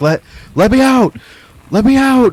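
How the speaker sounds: very high, shrill, rising scream. In a game scene, a prisoner in a holding cell cries out: screaming. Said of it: "just like screaming".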